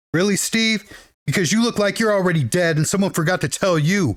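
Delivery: plain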